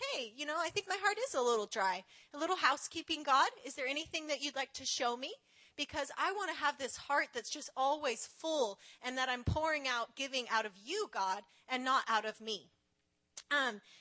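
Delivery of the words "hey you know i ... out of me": normal talking voice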